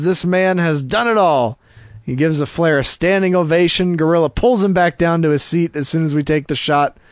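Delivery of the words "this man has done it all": ordinary delivery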